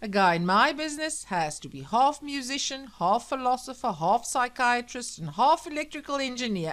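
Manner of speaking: loud, preachy bellow. A narrator reads a radio speaker's words as they bellow from the radio: Sam bellowing on the radio. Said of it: "bellowed the radio".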